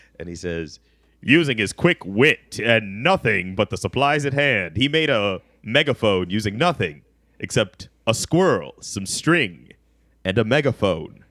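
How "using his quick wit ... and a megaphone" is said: radio show announcer-style narrator delivery. Retelling a show's scene, voicing its narrator in a radio show announcer voice. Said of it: "like a radio show announcer type of guy".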